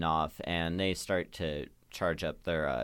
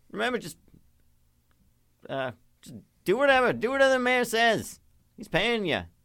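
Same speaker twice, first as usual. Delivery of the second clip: character voice yelling from far off; 8 dB louder than usual. Voicing a character calling back to the players from far away: yelling from far away.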